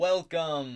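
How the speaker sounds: big booming voice. In the game, a voice from behind the bar greets the characters: booming voice. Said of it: "booms a voice".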